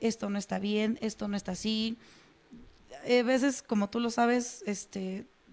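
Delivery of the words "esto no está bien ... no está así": normal talking voice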